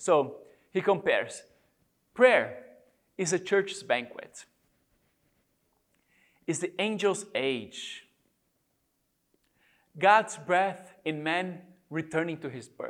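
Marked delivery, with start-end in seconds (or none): 2.1-12.9 slow reading with long pauses. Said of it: "So I'm gonna read them slowly".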